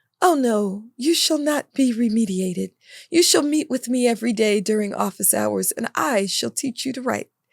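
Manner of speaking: put-on speaking in a British accent. Retell what Mister Learns said to you after your diagnostic test, in Mister Learns's British accent. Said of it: "I don't know where he got a British accent".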